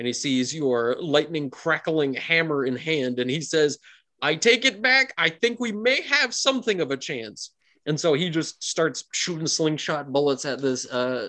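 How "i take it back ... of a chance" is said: yelling, screaming out, higher pitch. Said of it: "he starts screaming out".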